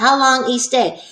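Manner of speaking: ordinary talk, nothing marked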